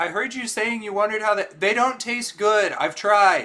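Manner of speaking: very loud, shrill, high-pitched yell. Calling after a stranger who ran away, yelling in character. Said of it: "I legitimately yelled that".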